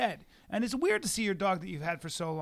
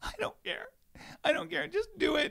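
mock crying, much higher pitch; 12 semitones higher than usual. Retelling a story, the speaker acts out a woman's reply, imitating someone crying. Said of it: "And she's crying".

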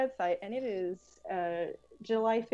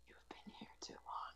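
barely audible, very quiet, breathy whisper. Narrating for players, voice a creature with long teeth, whispering. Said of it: "And then it just whispers".

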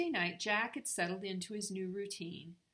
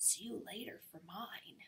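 close, soft, hushed whisper; 9 dB quieter than usual. Reading a story aloud, a character whispers into another's ear; whispered. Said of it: "he whispered in Jack's ear".

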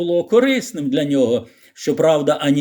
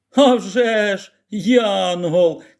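very slow, pitched-up, scornful mocking sneer; 5 semitones higher than usual. A boy scoffs at a girl's praise of someone: mocking sneer. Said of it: "Колін глузливо посміхнувся".

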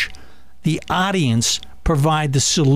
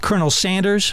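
ordinary delivery

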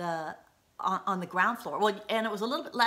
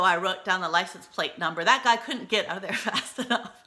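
normal talking voice

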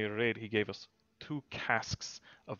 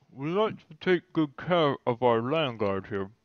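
very loud, talking with a full mouth; 3 semitones higher, 8 dB louder than usual. Retelling what a woman said while chowing down on a drumstick, imitating talking through a mouthful. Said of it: "Through a mouthful of food".

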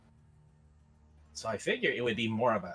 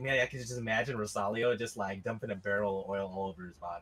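ordinary talk

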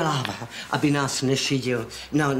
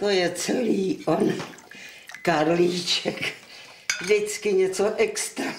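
slow speech through tears, crying; 4 semitones higher than usual. A mother speaks about the late karlíček after his death: crying while talking. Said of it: "Ty brečíš".

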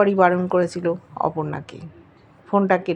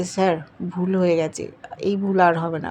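ordinary delivery, nothing marked

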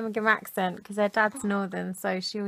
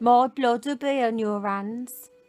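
fake Birmingham accent, Brummie-sounding. Trying out a northern accent, which comes out as a Birmingham-sounding accent. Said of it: "That's Birmingham".

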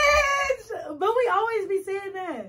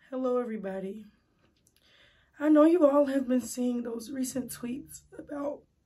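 fake sad tone, pitched lower; 7 semitones lower than usual. Starting a fake apology after being told to look sadder: put-on sad voice. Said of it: "Try to look more sad".

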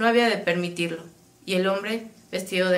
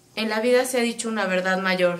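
plain

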